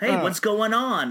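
loose put-on New York accent. Quoting a line from a movie, in a put-on New York accent. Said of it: "I'm just making a New York accent, kinda".

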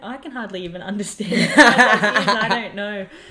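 loud, laughing disbelief.

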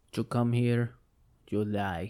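bad, unconvincing put-on Russian accent. Speaker joking about Svedka vodka, putting on a bad Russian accent. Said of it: "That was nothing like a Russian accent".

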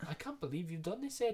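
put-on Irish accent. Retelling a scene where everyone turns on ed, in an irish accent. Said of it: "In their Irish accent".

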